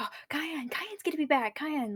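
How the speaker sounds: eager, excited, high half-whispered murmur. Voicing the excited crew reacting to the news: half-whisper. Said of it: "there's a whisper that's like".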